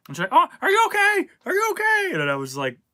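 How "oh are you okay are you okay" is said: mock frantic, very high and loud, panicked. Retelling a fall down the steps, imitating someone panicking. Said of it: "she was all, like, panicked".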